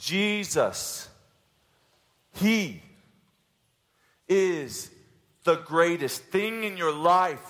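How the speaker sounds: slow, measured, word-by-word delivery with deliberate emphasis. Making the first point to the audience, repeating it on purpose: slow deliberate delivery. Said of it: "Let me say it slowly for you".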